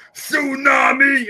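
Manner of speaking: very high, loud, shouted commentator-style call. Imitating a commentator calling a move: Wade Barrett impression. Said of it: "when he goes like".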